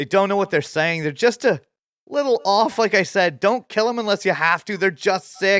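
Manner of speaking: shrill, very high, loud scream over background noise. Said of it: "Peach screams over the top".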